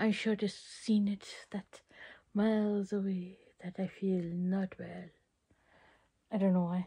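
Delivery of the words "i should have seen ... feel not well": Transylvanian vampire accent. Speaker slips into a voice mid-line; Transylvanian vampire accent. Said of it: "I had an accent there".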